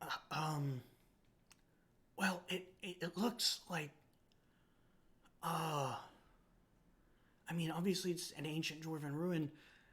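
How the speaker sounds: quiet character voice. Voicing Aaron Barr answering a player's question: Aaron Barr speaking very quietly. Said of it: "real quietly".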